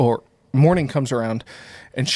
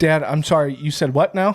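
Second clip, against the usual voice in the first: usual speaking voice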